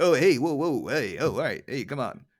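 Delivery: classic wise guy character voice and patter. Discussing a character's voice, the speaker does a classic wise guy voice. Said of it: "a classic wise guy voice too".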